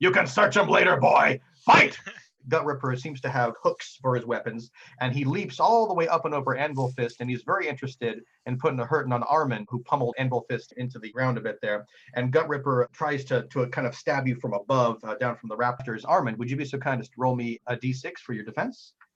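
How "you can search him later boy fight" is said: high, loud, commanding voice. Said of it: "Sacris looks down and says".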